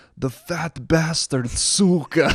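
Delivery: put-on Ukrainian accent. Retelling a funny moment, the speaker quotes Lou in Lou's Ukrainian accent. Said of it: "in his Ukrainian accent".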